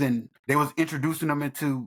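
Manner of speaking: ordinary talk, nothing marked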